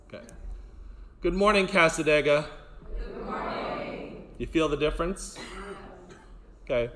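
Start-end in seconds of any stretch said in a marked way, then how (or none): 1.2-2.5 hearty, loud, powerful delivery full of gusto. Leading a group, the speaker demonstrates a morning greeting with gusto. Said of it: "do it with gusto... with power through your throat chakra".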